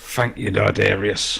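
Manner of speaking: played-up, theatrical stage whisper. In character, thanking Dardarius in a half-whisper: half-whispering. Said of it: "whisper out the words".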